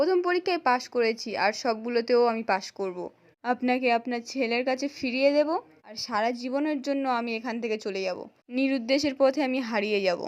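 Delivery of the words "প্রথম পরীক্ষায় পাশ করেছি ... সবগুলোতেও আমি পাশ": plain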